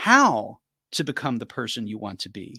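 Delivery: strong stress placed on the word "how". Reading the session title with the first word emphasized; stress on how. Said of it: "if we emphasize the first word, the how".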